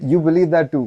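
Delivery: put-on heavy British accent, laid on thick. Speaker retelling a hostel chat, quoting the other guy's reply: thick british accent. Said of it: "in his thick British accent".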